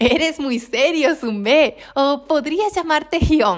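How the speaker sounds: syrupy, sugary tone. Reading a character's line to a young boy after bursting into laughter, in a honeyed voice. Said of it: "dijo con voz melosa".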